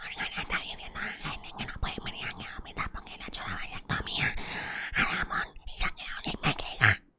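hushed, soft, quiet whisper.

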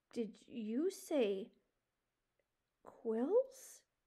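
very slow, hushed, fearful stammer. Warned she could get pricked by quills, she answers with a frightened stammer. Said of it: "she stammered".

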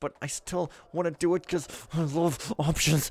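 lovestruck, smitten, in-love voice. Talking about still wanting to do an optional objective; in-love voice. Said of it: "That's my in love voice".

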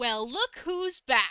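screeching, shrill delivery. Recounting how an aunt came in and greeted them, retelling a screech. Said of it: "Auntie just comes in and screeches".

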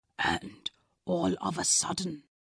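very quiet whisper, barely above a breath. A father telling his daughter a story whispers. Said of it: "he whispered".

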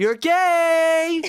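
very high, loud, stretched-out yell. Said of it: "So again, I went".

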